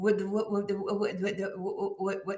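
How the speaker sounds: put-on stuttering speech. Retelling how a friend answered when woken at night: imitating Michael's stutter. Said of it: "he had a speech impediment".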